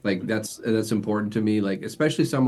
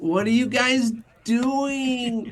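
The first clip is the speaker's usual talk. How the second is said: very high whine, "doing" stretched out; 14 semitones higher than usual. Retelling voicing a character who annoyed the players: put-on whiny voice. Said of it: "I even did a voice like".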